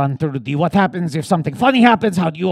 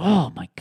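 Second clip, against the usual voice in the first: hushed, breathy whisper full of awe; 6 dB quieter than usual. Showing the audience how to react to a thought-provoking moment: thought-provoked awed reaction. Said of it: "I don't wanna give a line reading".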